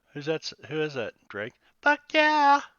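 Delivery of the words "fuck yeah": very high, shrill, loud whoop. Doing a soundbite impression of Robin: impression of Robin. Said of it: "That's my impression of Robin".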